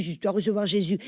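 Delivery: normal talking voice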